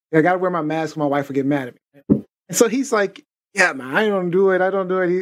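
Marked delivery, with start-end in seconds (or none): 3.5-5.2 put-on, Spanish-inflected accent. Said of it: "I don't mean to be doing the accent".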